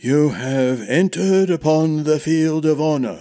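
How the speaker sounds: rasping, formal, ceremonial delivery. Narrator reads the master-at-arms addressing Brian and Darren, raspy but formal voice. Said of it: "said the master-at-arms in a raspy but formal voice".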